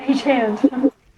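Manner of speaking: quiet, half-whispered stage whisper. Poking another character and suggesting a spell: half-whispering in character. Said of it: "I poke Sagra and I whisper".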